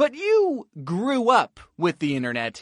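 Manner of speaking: you pushed out hard as the key word.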